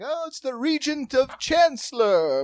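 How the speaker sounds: high, grand mock herald voice, announcer style.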